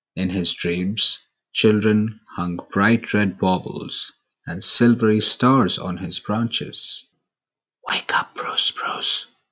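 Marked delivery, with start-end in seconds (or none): 7.9-9.3 whispered, much quieter. Narrator reads one tree waking a sleeping little spruce: whispered. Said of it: "whispered Penelope Pine".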